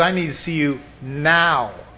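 ordinary talk

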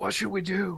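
loud stage whisper. Voicing a character asking the others what to do: loud whisper. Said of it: "very loudly whispers".

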